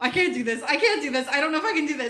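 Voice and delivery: put-on, panicked, looping freak-out. Retelling sitting next to the open plane door: imitating own past panic. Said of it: "freaking out".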